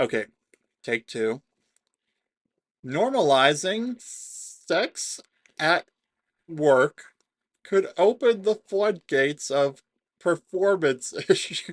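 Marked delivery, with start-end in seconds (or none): 2.8-11.7 laughing through it, cracking up mid-sentence, higher pitch. Reading an article aloud, trying to keep a straight face: laughing while talking. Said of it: "I'm trying to do this with as straight a face as possible".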